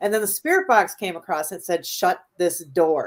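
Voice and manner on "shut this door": very firm, stern, unbending tone. Retelling what the spirit box said: imitating a very firm voice. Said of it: "it said it just like that, very firm".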